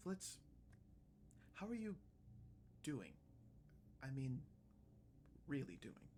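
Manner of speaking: very quiet, hushed, near-whispered tone. Retelling what a woman said to flitz as she leaned in, in a hushed tone. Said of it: "in a bit of a hushed tone".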